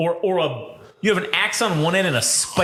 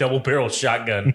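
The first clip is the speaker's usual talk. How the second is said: usual speaking voice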